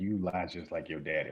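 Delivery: normal talking voice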